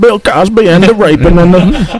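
very slow, high, stretched-out voice. Mocking a friend's words after saying he sounded like Bill Cosby: imitating a Bill Cosby voice. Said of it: "You sounded like Bill Cosby when you said that".

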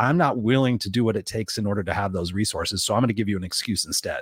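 ordinary delivery

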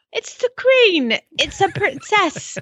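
put-on English accent, very high, very slow. Listing royal titles for a co-host: put-on English accent. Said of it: "I can do it with an English accent".

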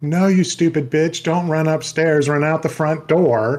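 mild, mock hollered yell. Describing audiences at a horror movie, imitating people screaming at the screen. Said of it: "people are screaming like".

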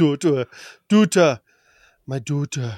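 put-on strange German-sounding accent. Showing how a woman says a word, with a weird German-sounding pronunciation. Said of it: "It sounds like a weird Duta. German pronunciation".

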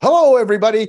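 put-on recording voice. Showing how people sound when they set out to record content: unnatural content-recording voice. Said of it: "Your voice goes like this".

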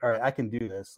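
ordinary talk, nothing marked

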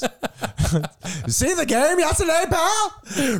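put-on very high, old-fashioned, old-timey voice. Praised by a co-host, the speaker keeps going in the old-timey voice. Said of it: "it's just turning more into my voice".

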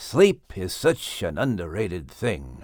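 low muttered mumble under the breath, half swallowed. Reading a story aloud, a character speaks quietly: mumbled under his breath. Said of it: "mumbled under his breath".

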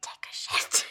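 secretive, breathy whisper. During a game, a player whispers a message into a translucent disc, whispering. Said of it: "I'm gonna whisper into the disc".

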